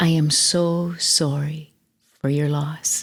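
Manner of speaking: put-on soft, gentle voice. Recalling how their dad called after a relative died, quoting him in a gentle voice. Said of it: "he said in his most gentle voice".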